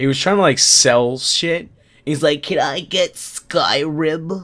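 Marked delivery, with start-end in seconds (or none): 2.4-4.4 very slow, dragging, drawn-out nerdy voice. Retelling what a customer who looked like a nerd asked: imitating a nerd's voice. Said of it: "He had that voice".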